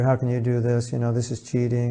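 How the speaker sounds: usual speaking voice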